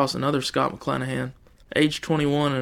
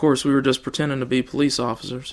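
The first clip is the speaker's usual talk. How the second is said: ordinary delivery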